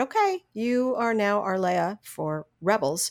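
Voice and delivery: ordinary talk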